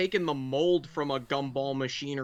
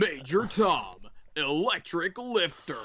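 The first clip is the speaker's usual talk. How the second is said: ring MC-style announcer voice; 2 semitones higher than usual. Announcing a robot's name and weapon in Stefan Frank announcer voice. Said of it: "Stefan Frank announcer voice".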